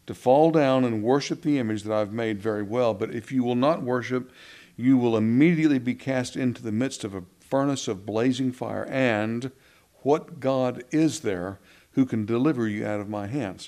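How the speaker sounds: usual speaking voice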